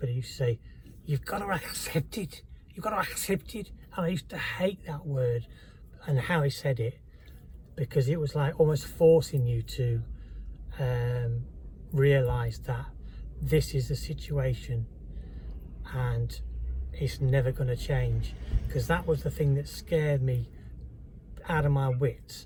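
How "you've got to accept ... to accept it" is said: put-on higher-pitched, terrible Scouse accent. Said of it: "I'm gonna do a terrible Scouse accent now".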